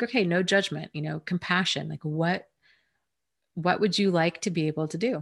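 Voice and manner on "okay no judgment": usual speaking voice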